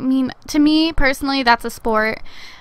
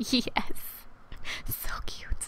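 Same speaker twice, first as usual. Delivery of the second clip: whisper, much quieter; 16 dB quieter than usual. Streamer reacting to a game scene, whispering into the microphone. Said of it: "I'm over here whispering so cute into my microphone".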